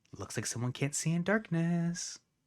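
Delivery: hushed, voiceless half-whisper. Voicing a character who taunts the party in the dark: half-whispering. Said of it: "you hear her whisper".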